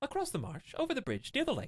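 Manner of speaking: put-on very high, swooping, sing-song little boy voice. Answering a question about where Tinpang is, in a high-pitched little boy voice. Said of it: "I have a very high-pitched boy voice".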